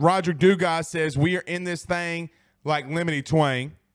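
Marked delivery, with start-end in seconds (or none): none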